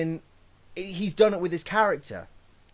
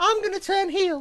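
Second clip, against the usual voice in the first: very high-pitched, abrupt, blurted delivery; 13 semitones higher than usual. Mocking a promoter's sudden announcement: imitating Dixie Carter. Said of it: "in that exact voice".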